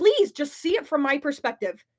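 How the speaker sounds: earnest, pleading, literal begging. Asking listeners to understand not wanting kids: begging. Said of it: "literally begging".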